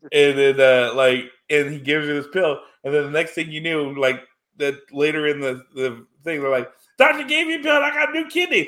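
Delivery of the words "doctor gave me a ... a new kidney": mock squealing, very high, thrilled, excited gush. Retelling a movie scene where a patient reports a new kidney: imitating someone excited. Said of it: "she's all excited".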